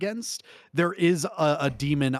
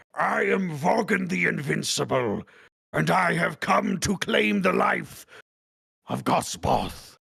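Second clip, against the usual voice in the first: slow, drawn-out, rough rasping demon lord voice; 3 semitones higher than usual. Voicing a demon who lands and announces himself: Vogan the Invincible's voice. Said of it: "he goes".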